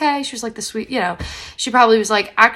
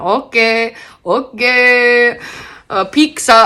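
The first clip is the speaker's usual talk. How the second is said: very slow, loud put-on Spanish accent, okay stretched; 6 dB louder than usual.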